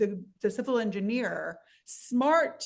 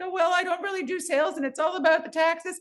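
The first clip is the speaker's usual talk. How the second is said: flustered, jittery, high, squirrely nervous rambling; 8 semitones higher, 3 dB louder than usual. Showing a listener how they didn't sound answering a sales question: high nervous voice. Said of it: "Your voice didn't get all high".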